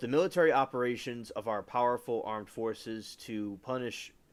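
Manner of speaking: usual speaking voice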